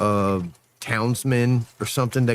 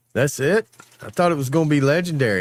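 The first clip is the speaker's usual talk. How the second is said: mocking, sarcastic, pitched-up villain sneer; 3 semitones lower, 5 dB quieter than usual. Describing a movie to a friend, you act out the main villain's lines, mock-sarcastic. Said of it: "the sarcasticness of all the bad guys".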